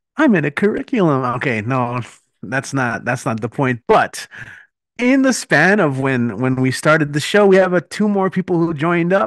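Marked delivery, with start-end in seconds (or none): 0.2-1.3 put-on dopey cartoon kid voice, pitched much higher. Show host repeating his own remark, this time in a Ralph Wiggum voice. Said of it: "Why did I read that in the Ralph Wiggum voice?".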